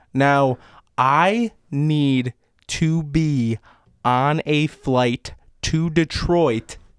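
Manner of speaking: very slow, deliberate delivery. After asking Gary his name, the speaker demands a flight, talking real slow. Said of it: "I'm going to talk real slow for you".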